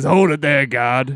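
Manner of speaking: loud, drawn-out, big yell. Retelling a wrestling segment, imitating Vince McMahon yelling. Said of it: "it's really like this when he yells".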